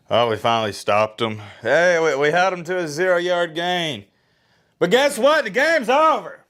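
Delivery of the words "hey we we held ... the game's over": all-out screaming rant with pitch climbing higher. Reacting to the game's end as fans leave, screaming. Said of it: "I'm sorry for screaming".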